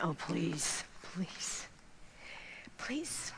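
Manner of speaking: put-on breathy, tearful, trembling, pleading whisper. The speaker recalls pleading with the Lord, retelling crying and shaking. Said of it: "As I'm crying and shaking and saying".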